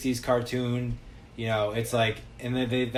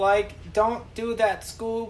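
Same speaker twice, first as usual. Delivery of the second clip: very high-pitched, slow, stretched-out cartoon voice; 10 semitones higher than usual. Showing how the speaker and friends talk all day: Shaggy voice. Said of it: "we all talk in a Shaggy voice".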